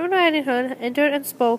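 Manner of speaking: ordinary talk, nothing marked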